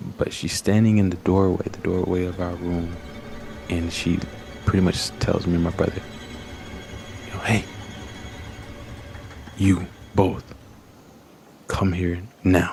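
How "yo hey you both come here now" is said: put-on sharp, slow, deliberate voice. Retelling mom calling the kids from the doorway: imitating mom's sharp tone. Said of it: "It was a sharp tone".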